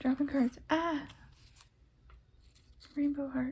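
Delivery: laughing through words. Showing a favorite card deck on video, dropping cards: laughing.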